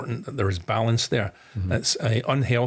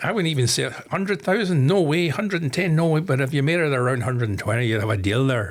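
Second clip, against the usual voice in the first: bad, poorly done put-on Irish accent; 3 semitones higher than usual. Retelling a haggle over selling his shares, bad Irish accent as Mister Lowe. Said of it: "a bad Irish accent coming up".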